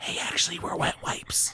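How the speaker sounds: confiding, secretive whisper, hushed. Speaker voicing a packet that secretly speaks to you, in a whisper. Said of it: "it whispers it to you".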